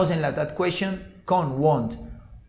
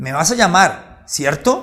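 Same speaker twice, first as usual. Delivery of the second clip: rising pitch on cierto. Teaching intonation for checking or confirming something: rising intonation at the end. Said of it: "la entonación va a ser ascendente".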